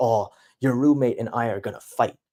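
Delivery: normal talking voice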